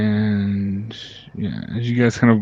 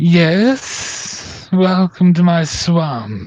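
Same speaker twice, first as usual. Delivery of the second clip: put-on thin, high, reedy old woman voice; 7 semitones higher, 4 dB louder than usual. Voicing an old woman who opens her door to visitors, reedy old woman voice. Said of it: "greets you with just a reedy voice".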